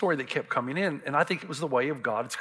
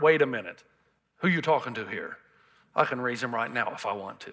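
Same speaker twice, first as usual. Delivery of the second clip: stern put-on voice; 2 semitones lower than usual. Retelling a Bible scene, speaking the words of Jesus: stern Jesus voice. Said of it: "And Jesus looks sternly".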